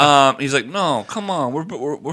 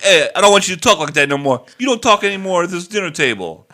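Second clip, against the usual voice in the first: loud, put-on Brooklyn accent; 5 semitones higher, 5 dB louder than usual. Retelling what someone said at the dinner table, in a put-on Brooklyn accent. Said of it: "While I do appreciate the accent".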